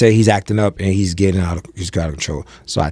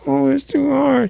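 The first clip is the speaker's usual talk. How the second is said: mock teary little-kid voice, very high, drawn-out whimper. Retelling how a child started crying over tying shoes: imitating a crying child. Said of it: "He started crying".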